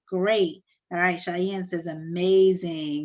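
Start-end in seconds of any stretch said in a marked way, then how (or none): none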